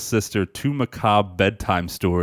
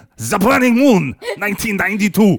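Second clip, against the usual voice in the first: fake German accent shout, higher and louder; 11 semitones higher, 5 dB louder than usual. Saying the movie title again after being asked to shout it: shouting in a put-on German accent. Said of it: "I thought you were gonna shout it".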